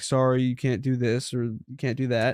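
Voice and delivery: ordinary talk, nothing marked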